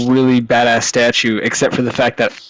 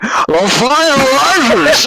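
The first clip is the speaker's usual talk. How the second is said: very high, shrill scream, one word drawn out; 14 semitones higher than usual. Retelling shouting a line in a Bane cosplay: imitating own loud scream as Bane. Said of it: "scream really fucking loud so they could hear me".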